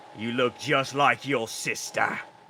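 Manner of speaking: loud, booming minotaur roar. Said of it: "the Minotaur says to you".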